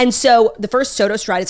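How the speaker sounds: ordinary delivery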